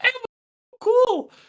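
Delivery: very high-pitched put-on voice. Retelling a man holding a hostage speaking for her, in a high-pitched voice. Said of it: "In like a high-pitched voice".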